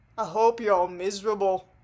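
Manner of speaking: attempted northern English accent. Retelling what Phil said, trying to do a northern accent. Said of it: "I was trying to do a northern accent".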